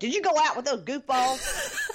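put-on, high-pitched, angry scolding yell. Speaker recounts a scene where a woman calls a man up: retelling a woman yelling. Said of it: "she calls him up and she yells at him".

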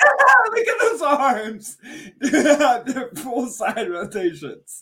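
high, very slow, drawn-out, swooping, giggle-broken talk. Describing a character's running arms while laughing hard while talking. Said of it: "I'm laughing too hard".

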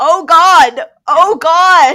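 very high, very loud, very slow, drawn-out scream. Retelling an argument where Veronica kept screaming: imitating Veronica screaming. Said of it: "Veronica just keeps screaming".

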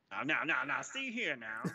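put-on cartoon rooster voice. Speaker teased about transforming answers the others in a Looney Tunes rooster voice. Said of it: "talking like the fucking rooster from Looney Tunes".

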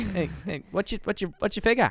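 poor put-on Australian accent, very high pitch. Showing the other speaker the australian lingo they love: poor australian accent. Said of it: "a really poor Australian accent".

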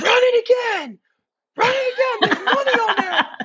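screaming at a very high pitch. Retelling a buddy screaming at the bartender over payment; imitating someone screaming. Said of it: "our buddy is just screaming at the bartender".

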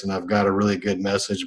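dull, lifeless, flat, boring droning monotone. Describing his horrible earliest videos: flat monotone. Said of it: "I'm very monotone like this".

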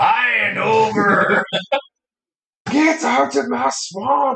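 put-on full Scottish accent, very high pitch. Urged by another player to go full Shrek, doing a Shrek voice. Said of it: "Go full Shrek".

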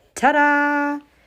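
grand, proud, loud, high, announcer-like, "ta-da" drawn out. Revealing a surprise from behind her back, she announces it. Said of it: "announced [name]".

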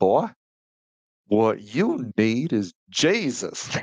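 high, swooping drawl of the American South. Retell what a man told you in the car after you shared your feelings, imitating a Southern drawl. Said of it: "that just that Southern drawl".

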